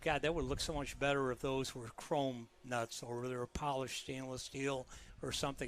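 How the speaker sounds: ordinary talk, nothing marked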